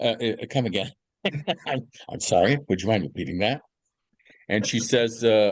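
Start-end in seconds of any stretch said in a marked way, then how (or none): 0.5-3.6 put-on hesitant voice, tripping over the words. Retelling own reply to a girlfriend's surprising news: Woody Allen impression. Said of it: "I went into Woody Allen mode".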